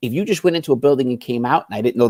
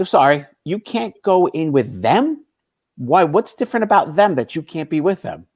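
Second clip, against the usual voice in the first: much louder, pitched-up, mocking, sarcastic wise-ass tone; 5 semitones higher than usual. Retelling his reply to a man who whispered to him, the speaker retells speaking much louder. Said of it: "I speak much louder now".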